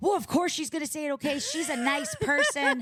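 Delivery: high-pitched, angry, scolding yell. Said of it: "she is yelling at me".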